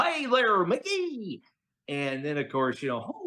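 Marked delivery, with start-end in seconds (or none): 0.0-1.4 very high, full cartoon dog voice. A Disney fan shows off character voices, doing a Goofy voice. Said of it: "this here's Goofy".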